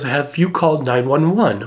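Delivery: ordinary delivery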